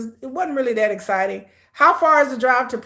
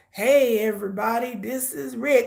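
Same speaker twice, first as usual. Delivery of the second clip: put-on frail old-man voice. Describing how Rick seems fragile, imitating Rick like an old man. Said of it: "he talks like".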